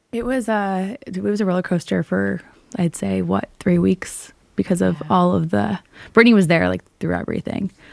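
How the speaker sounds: choked up, on the verge of tears. Telling a co-host about a miscarriage, on the verge of tears. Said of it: "oh my God, I'm gonna cry".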